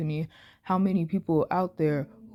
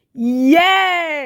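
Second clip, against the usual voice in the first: very loud, high, excited shriek, "yes" drawn out; 9 semitones higher, 11 dB louder than usual. Speaker reacts to a statement of allyship: screaming with excitement. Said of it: "I'm screaming".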